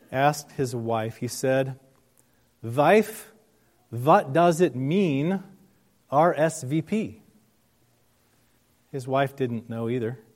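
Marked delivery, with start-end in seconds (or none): 2.6-7.2 put-on heavy Eastern European accent, very slow. Telling a story, the speaker quotes a husband asking his wife, thick Eastern European accent. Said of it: "in his thick Eastern European accent".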